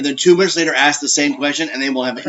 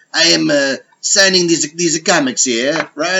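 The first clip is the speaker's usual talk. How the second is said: put-on French accent, not quite right, botched. Retelling what a show's creator said at a comic signing: poorly done French accent. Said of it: "I don't do the accent right".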